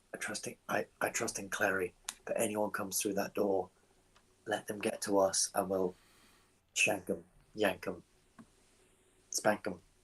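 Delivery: speaking in a whisper. Playing a character in a role-play scene, whispering to the group. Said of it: "I'm just gonna like whisper".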